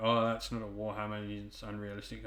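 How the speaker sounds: normal talking voice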